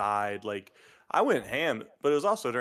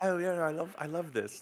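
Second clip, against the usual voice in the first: put-on Australian accent, higher and quieter; 6 semitones higher, 4 dB quieter than usual. Imitating a saleswoman at a Warhammer area: imitating an Australian saleswoman.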